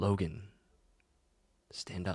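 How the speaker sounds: very quiet, hushed, very faint, barely-there voice. A voice calls to Logan while he hides his head, very faint voice. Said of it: "you hear a very faint voice that says".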